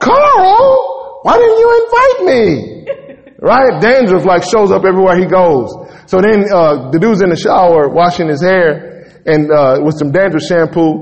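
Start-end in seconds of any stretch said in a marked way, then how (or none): 0.0-2.5 very high, slow, drawn-out irritating voice. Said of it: "He got an irritating voice".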